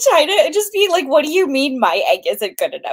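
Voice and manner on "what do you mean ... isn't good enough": put-on insulted, offended, jealous, indignant huff. Acting out Iskierika, jealous of the Imperial dragon: imitating jealous Iskierika. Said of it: "so jealous of the Imperial dragon".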